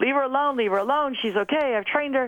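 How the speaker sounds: yelling with repeated words. Retelling what the coach shouted during the race: imitating coach yelling. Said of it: "and he was yelling".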